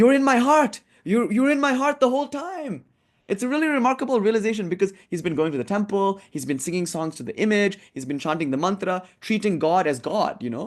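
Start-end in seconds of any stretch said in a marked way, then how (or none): 0.0-2.8 very high-pitched, excited outburst. Retelling a scene where the man realizes the Mother: imitating excited exclamation. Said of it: "He's like so excited".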